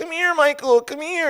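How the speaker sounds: very high-pitched, forced, fake cheerfulness. Retelling how a woman kept calling a man over; imitating feigned happiness. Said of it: "she's trying to pretend like she's happy".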